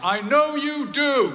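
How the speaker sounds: very loud, high, shrill shout. Retelling what your dad said to you: dad's loud voice. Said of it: "in a loud voice".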